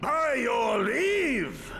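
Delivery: huge, booming, thunderous voice that fills the hall. A visitor announces himself at the door, booming voice. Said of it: "that voice could fell a gigas".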